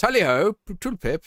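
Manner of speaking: very high, loud, put-on weird posh accent. Speaker imitating how a man on the phone talks, in a weird put-on posh accent. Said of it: "just like this completely weird posh accent".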